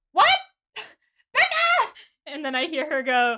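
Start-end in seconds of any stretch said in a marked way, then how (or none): 0.2-2.0 loud, shrill, very high-pitched scream. Telling listeners how she reacted after finishing the chapters, retelling a scream. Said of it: "I just screamed".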